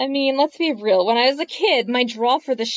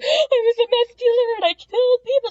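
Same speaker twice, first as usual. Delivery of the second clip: very high, play-acted frantic, panicky freak-out; 12 semitones higher than usual. Retelling a scene where a character wakes from a bad dream: imitating Hal freaking out. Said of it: "'cause he's freaking out".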